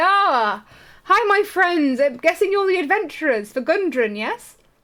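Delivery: jolly, happy voice. Voicing a cheerful bearded guy who greets the adventurers: cheerful, happy character voice. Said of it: "this really happy, cheerful little bearded guy".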